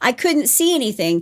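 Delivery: ordinary talk, nothing marked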